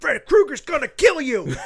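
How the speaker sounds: high-pitched loud yelling.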